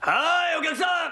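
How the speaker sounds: loud, high-pitched shouting.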